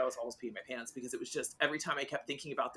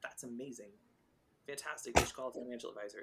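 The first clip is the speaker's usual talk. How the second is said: mock calm, chill tone, much quieter, lower; 2 semitones lower, 7 dB quieter than usual. Speaker acts out how he'd react to a lottery win, imitating his chill tone. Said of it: "he's so even mannered and like so chill".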